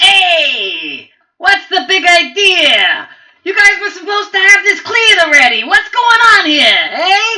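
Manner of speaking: very loud, very high, bossy shouting. The game master voices the goblin boss arriving on the scene, goblin boss character voice. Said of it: "Okay, so the goblin boss is on the scene. / His eyes are glowing fiery red, a lot brighter than the hobgoblins. He also has this aura that is encircling him. That's like it's almost like a blood aura".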